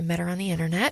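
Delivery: soft dip in volume. Speaker telling his own story to listeners; dip in volume. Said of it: "definitely a dip in the volume".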